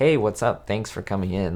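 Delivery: ordinary talk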